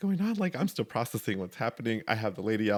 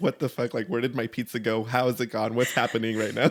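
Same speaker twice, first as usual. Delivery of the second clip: ordinary delivery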